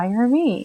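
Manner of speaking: hushed half-whisper, as if to oneself. Retelling a phone call with the host, imitating own half-whisper. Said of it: "I'm whispering to myself".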